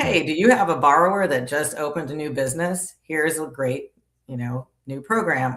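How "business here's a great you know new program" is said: normal talking voice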